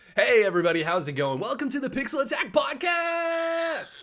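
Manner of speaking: high-pitched, cheesy, bad radio DJ voice. Opening the podcast episode and greeting listeners in a bad radio dj voice. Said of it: "I love the bad radio DJ".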